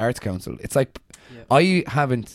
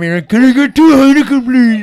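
mock screaming, higher and louder; 14 dB louder than usual. Joking about what a statue figure seems to be doing: imitating someone screaming. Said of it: "he's there screaming".

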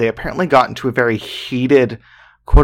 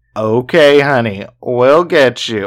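heavily mocking, drunken-sounding voice; 3 dB louder than usual. Retelling how a very drunk man on a boat responded: imitating a mocking drunk man. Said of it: "in this super mocking tone".

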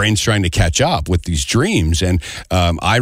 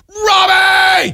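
very high, loud yell bursting out; 5 dB louder than usual. Retelling a dream where they finally called out, retelling a shout. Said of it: "I finally shouted".

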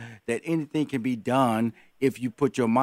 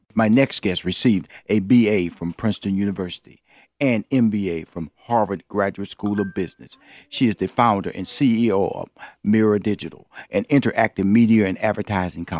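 put-on public radio announcer voice, lower and louder; 4 semitones lower, 5 dB louder than usual. Introducing the next guest and reading her credits: NPR-ish announcer voice. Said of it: "did I sound N P R-ish?".

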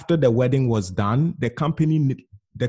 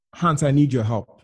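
put-on upset, tearful pleading voice. Retelling a call from a friend's sister asking for help: imitating someone upset and in tears. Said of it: "very upset, literally in tears".

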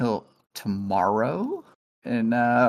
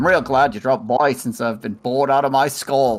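convincing put-on Australian accent. Closing the show in character as Pyro: Australian accent. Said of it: "the best Australian accent from a non-Aussie".

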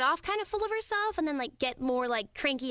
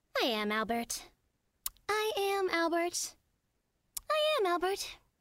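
kind of sweet, high delivery; 5 semitones higher than usual. An actor reads lines in a voice recording session: sweet. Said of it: "all those were kind of sweet".

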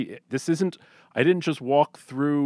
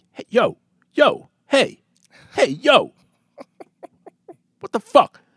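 very high, loud, scrappy little tough-guy voice; 10 semitones higher, 6 dB louder than usual. Retelling a stranger shouting after him on the sidewalk: imitating a little tough guy. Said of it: "little tough guy, and he's like".

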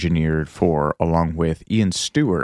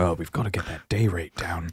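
muttered put-on miser voice, quieter; 7 dB quieter than usual.

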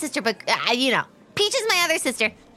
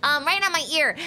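plain

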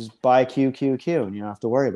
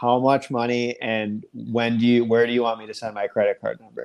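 ordinary talk

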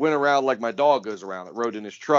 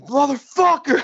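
acted-out very high, terrified shriek; 4 dB louder than usual. Retelling a terrifying car ride, the speaker yells at the driver, retelling a scared scream. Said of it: "I'm scared to death".

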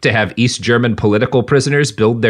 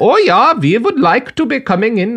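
put-on clumsy Swedish accent, very high-pitched; 12 semitones higher than usual. Voicing a company in a skit-like aside: bad Swedish accent. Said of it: "I can't do a good Swedish".

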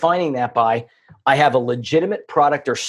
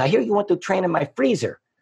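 thick cartoonish Eastern European accent, pitched up; 5 semitones higher, 3 dB quieter than usual. Retelling Tibor calling back about a business call, imitating Tibor's heavy accent. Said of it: "He has this heavy accent".

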